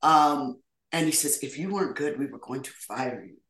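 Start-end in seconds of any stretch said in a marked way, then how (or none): 1.4-3.3 put-on soft, quiet, thick German accent. An actor retells what Roland Emmerich told him about his first film: Roland Emmerich impression. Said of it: "with his thick German accent".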